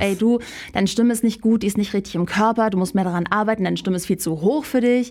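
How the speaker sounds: normal talking voice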